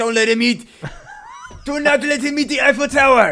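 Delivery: bad exaggerated French accent, very high, very loud. Acting out French guards in a silly story, in a bad stereotypical French accent. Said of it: "bad French stereotypical accent".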